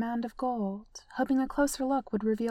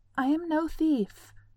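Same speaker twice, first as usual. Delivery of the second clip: quavering, trembling, very slow, raised pitch; 5 semitones higher, 3 dB louder than usual. Narrator reading her line as she slips between two piles of coins, voice shaking. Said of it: "Her voice shook".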